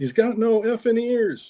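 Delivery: screamed, with voice pitched very high. Retelling what the guy in the front seat shouted: imitating someone screaming. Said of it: "the guy in the front seat screams".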